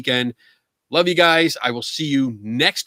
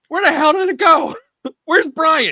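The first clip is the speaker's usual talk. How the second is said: mock, very high, loud, frantic yelling; 6 dB louder than usual. Retelling yelling after the show suddenly cut off: imitating own yelling. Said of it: "I'm yelling at Eric".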